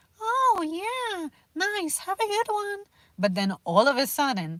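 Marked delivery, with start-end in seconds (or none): 0.2-2.8 very high, soft, polite, sweet voice. Imitating a former coworker giving customer service, imitating coworker's soft high voice. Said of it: "really soft, really high pitch".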